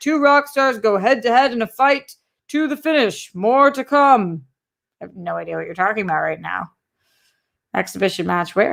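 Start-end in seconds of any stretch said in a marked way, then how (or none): 0.0-4.4 broadcast promo announcer voice, pitched up. Reading out a promo for an upcoming film trivia match, announcer voice. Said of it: "please read an announcer voice".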